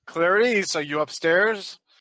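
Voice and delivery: smooth, charming put-on voice. In a role-played scene, calling upstairs to someone in a charming voice. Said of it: "in my charming voice".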